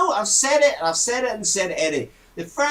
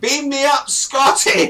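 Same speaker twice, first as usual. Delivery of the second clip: put-on loud, high drunken shout. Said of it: "I start shouting".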